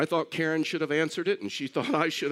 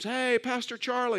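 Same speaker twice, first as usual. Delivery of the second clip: mock hollered, high-pitched, loud shout; 8 semitones higher than usual. Retelling how the mower guy called out on the golf course: imitating someone screaming. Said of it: "shuts it down and screams".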